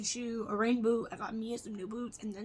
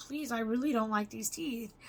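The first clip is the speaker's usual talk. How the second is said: mock-tearful, crying, pleading voice. Retelling walking back in crying after signing the paper: retelling tearful pleading. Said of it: "I walked back in crying and I was like".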